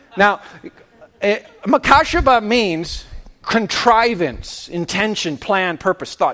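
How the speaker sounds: ordinary talk, nothing marked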